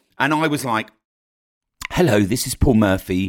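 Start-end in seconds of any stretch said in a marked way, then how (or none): 1.9-3.3 put-on, slightly odd, posh voice. Recreating how he once introduced his podcast, put-on poshish voice. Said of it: "I can emulate how I spoke ... I'm coming out of crappy character there ... talk in a poshish voice, sound a bit weird".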